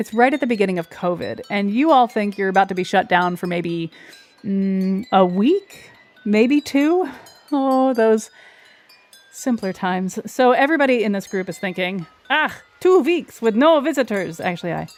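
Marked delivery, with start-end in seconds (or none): 12.3-14.4 fake German accent, higher. The speaker voices a group's inner monologue in a bad German accent. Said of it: "I suck at doing a German accent".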